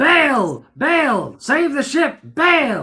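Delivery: mock loud calling out, "Bail" held long. Retelling a shark attack, calling out to the crew: imitating someone yelling. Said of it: "I'm yelling out to the crew".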